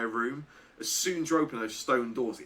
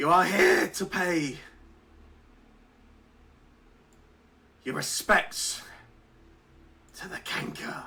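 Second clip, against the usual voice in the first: high, loud, slightly broken, croaking voice; 6 semitones higher, 5 dB louder than usual. Voicing a skull-staffed creature shouting down at the party: slightly broken croaked voice. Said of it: "calls down this slightly broken, croaked voice".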